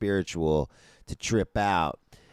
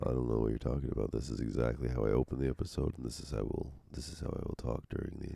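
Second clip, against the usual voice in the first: very low, hushed, creaky put-on sultry voice; 8 semitones lower, 9 dB quieter than usual. Answering a co-host who says the voice has changed, in a put-on sultry voice. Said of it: "changed from what you were using before".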